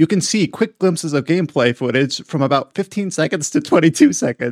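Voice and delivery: read aloud with laughter seeping through. Reading a sentence from a news article aloud, laughing while reading. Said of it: "You can probably hear it through my voice".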